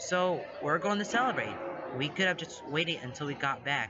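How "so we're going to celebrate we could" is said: ordinary delivery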